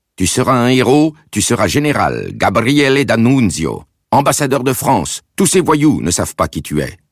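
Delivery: exalted, soaring, very high-pitched delivery. Reading a mother proclaiming, waving her cane at soldiers: inspired proclamation. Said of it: "sur le mode inspiré".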